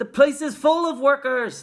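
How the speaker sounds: very loud, high-pitched shout. Reading a story, voicing the people on the street outside the factory: shouted. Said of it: "the people shouted".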